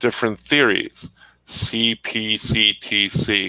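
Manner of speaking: very slow, plodding, deliberate, drawn-out lecturing cadence. Recalling a high school geometry teacher explaining theories, in Murray Lotion's slow cadence. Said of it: "so he would talk like this".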